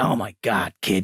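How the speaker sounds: very deep, slow, drawn-out voice. Retelling a first talk with Al Ruddy: deep voice imitating Al Ruddy. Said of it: "he's got this really deep voice".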